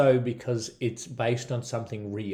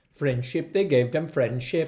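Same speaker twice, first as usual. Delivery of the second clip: Welsh-accented speech; 4 semitones higher than usual. Retelling a story about money given to a Welsh town: Welsh accent. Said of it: "I'm going to talk like a Welshman".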